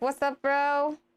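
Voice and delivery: casual, chill dude-bro voice. Players joking about how the Draco Lich talks, in a Draco Lich dude-bro voice. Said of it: "And he's like".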